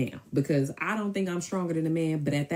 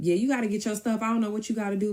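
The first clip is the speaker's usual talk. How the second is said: put-on raised voice, higher pitch; 6 semitones higher than usual. Retelling telling a cousin to get his stuff: retelling own raised voice. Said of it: "my voice is raised".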